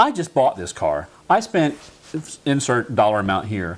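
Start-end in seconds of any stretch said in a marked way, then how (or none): 0.0-1.8 huffy, swooping, put-on put-out griping tone. Retelling a customer's complaint at the shop: imitating a huffy customer. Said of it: "she's a little bit huffy".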